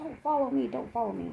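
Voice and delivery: furious, angry shouted yell. Recounting a man walking away while the girlfriend called dispatch, retelling a man's yell. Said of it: "And then he's yelling".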